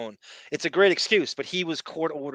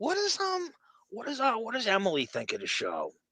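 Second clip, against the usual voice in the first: soft, reticent, pitched up, swooping and halting; 8 semitones higher, 7 dB quieter than usual. Act out how Artie would occasionally ask about the show, imitating Artie's reticent voice. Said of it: "you could feel the the reticence in his voice".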